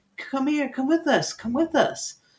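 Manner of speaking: very high, giggling creature voice. Narrating swimming figures who beckon the group to follow them: giggling creature voice. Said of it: "they all kind of like start giggling".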